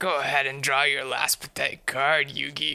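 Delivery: low, silly, goofy voice. Speaker showing off silly voices, as the rival Kaiba taunting Yugi: silly Kaiba voice. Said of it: "silly voices".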